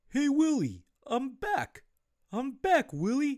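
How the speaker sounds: shrill alien voice with big swooping pitch swings. Host hinting at an 80s TV show, doing a terrible Alf impression. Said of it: "with this terrible impression".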